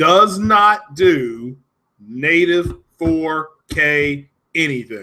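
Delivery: very slow and deliberate, each word spaced out. Stressing a point, said very slowly. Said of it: "I'm going to say this very slow".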